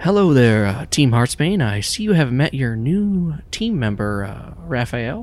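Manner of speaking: gentle, kindly voice. Narrator voicing a man greeting Team Heartsbane, kind voice. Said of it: "speaks with a kind voice".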